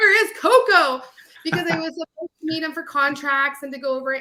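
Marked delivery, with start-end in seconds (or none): 0.0-1.0 loud, high screaming. Retelling how a mentor called down the hallway: imitating Doug Goss screaming. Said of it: "he just started screaming".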